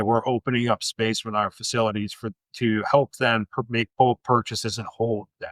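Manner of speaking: normal talking voice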